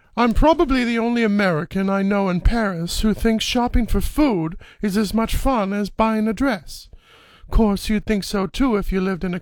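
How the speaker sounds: very high-pitched put-on film-style character voice. On a radio show, the speaker repeats a movie quote for listeners to guess: movie character impression. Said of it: "that was a pretty darn good impersonation".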